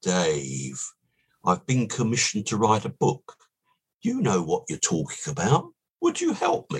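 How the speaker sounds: man's put-on South African accent. Retelling what Ian said to the speaker, imitating Ian's South African accent. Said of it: "And in his South African accent".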